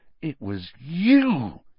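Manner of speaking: slow, dawning suspicion, "you" drawn out. Harry, seized by a sudden suspicion, confronting Dobby, said slowly. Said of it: "he said slowly".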